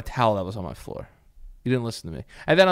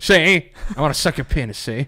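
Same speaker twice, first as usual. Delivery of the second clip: put-on old-timey, old-fashioned way of talking; 2 semitones higher than usual. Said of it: "when everybody talked like that".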